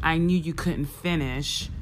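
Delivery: plain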